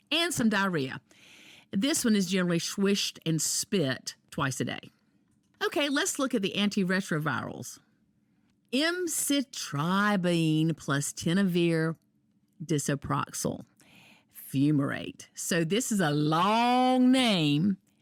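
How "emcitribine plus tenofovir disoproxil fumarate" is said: very slow, careful, syllable-by-syllable enunciation. Reading a long drug name aloud for listeners, very slowly. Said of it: "I said it very slowly".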